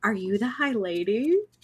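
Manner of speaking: soft, hushed half-whisper, close in the ear. Retelling a creepy story moment, a voice in your ear: soft half-whisper. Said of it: "a soft voice whispers in your ear".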